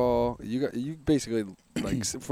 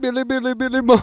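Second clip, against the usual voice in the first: mock Jamaican accent, higher and louder; 13 semitones higher, 8 dB louder than usual. Retelling goofing off on a car ride: put-on Jamaican accent. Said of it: "staying in that voice".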